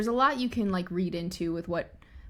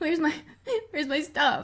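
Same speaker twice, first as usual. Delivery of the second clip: put-on panicked voice, higher pitch; 9 semitones higher than usual. Retelling a scene where a character finds her things dumped out: panicked Arya voice. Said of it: "and she's in a panic".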